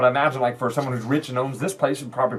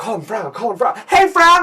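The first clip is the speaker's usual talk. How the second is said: shrill, loud character-voice holler; 9 semitones higher, 6 dB louder than usual. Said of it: "He's the one yelling".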